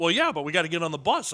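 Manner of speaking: ordinary talk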